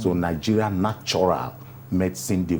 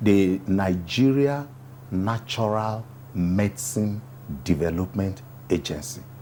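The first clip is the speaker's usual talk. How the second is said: slow, careful, unhurried, deliberate enunciation. Interview answer naming the nigeria natural medicine development agency: slow, deliberate naming. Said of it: "you notice I have decided to say it slowly, appropriately".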